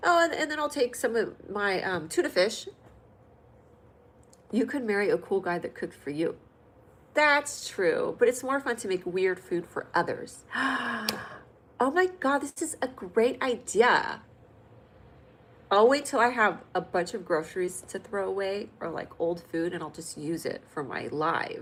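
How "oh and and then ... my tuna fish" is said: higher, breezy cooking-show host patter. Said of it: "I'll be like".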